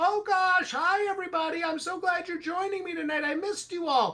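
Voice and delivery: put-on, very high, cute, cuddly teddy bear voice. Retelling scaring people in a hallway with a teddy bear: put-on teddy bear voice. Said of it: "take the bear and move its hands and go".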